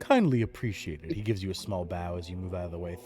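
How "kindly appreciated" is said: put-on elderly man character voice. Voicing an old man asking a big fellow to step aside: voicing an old elder.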